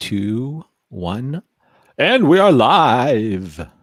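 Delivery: very slow put-on radio broadcaster voice. Counting down to going live, in a radio announcer voice. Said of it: "interesting radio voice you had there".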